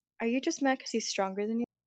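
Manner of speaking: whispered. In a role-play scene, leaning in to speak into someone's ear, whisper. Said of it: "whisper in Dalen's ear".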